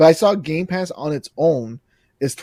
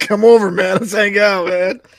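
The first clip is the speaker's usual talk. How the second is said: put-on drunk voice, loud and drawn-out; 6 semitones higher, 6 dB louder than usual. Imitating drunk Scott inviting a friend over: imitating drunk Scott. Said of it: "this is drunk Scott saying".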